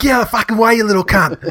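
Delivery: put-on full bogan broad Australian accent, very high. Quoting the favourite part, a super Aussie guy: super Aussie accent. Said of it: "like a like a super Aussie guy".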